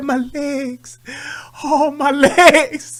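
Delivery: very slow, trembling, drawn-out complaining voice. Retelling a cousin's answer through a bathroom door: imitating Don's shaking voice. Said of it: "His voice was shaking like that".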